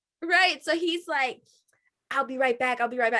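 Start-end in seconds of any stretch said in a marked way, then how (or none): 2.1-3.2 imitated London accent. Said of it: "so he has the accent".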